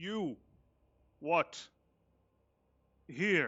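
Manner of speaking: high, loud, halting broken Common, non-native speaker. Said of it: "he's speaking a very broken common".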